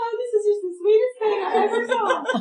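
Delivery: put-on weeping. Telling a story, the speaker acts out a woman who starts crying, imitating a woman crying. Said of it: "starts crying like".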